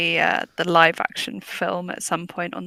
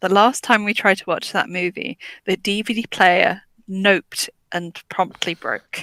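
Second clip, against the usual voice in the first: usual speaking voice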